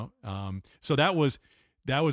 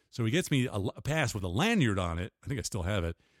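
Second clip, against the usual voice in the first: ordinary talk, nothing marked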